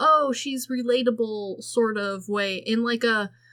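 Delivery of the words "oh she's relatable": plain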